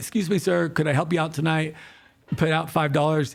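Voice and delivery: put-on polite voice. Retelling offering help to a stranger: imitating own polite voice. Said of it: "And it's super polite".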